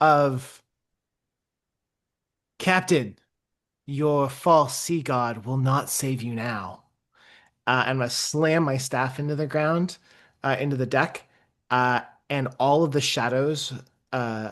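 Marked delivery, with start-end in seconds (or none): 0.0-6.8 very clear, strangely cheerful and oddly friendly tone. A player character calls across to a captain on two boats; loud, clear, oddly friendly. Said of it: "in a very loud, clear, and oddly friendly voice".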